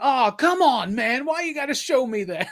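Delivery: play-acted alarmed, spooked, high, freaked-out tone. Retelling a friend's reaction to being shown something, imitating him freaked out. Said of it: "like freaked out by it".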